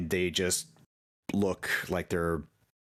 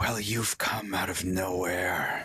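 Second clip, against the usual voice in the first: whispered, hushed horned-devil character voice. In a game, the narrator voices a horned devil floating up to a player, whispery horned-devil voice. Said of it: "in kind of like a whisper tone".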